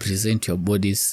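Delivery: normal talking voice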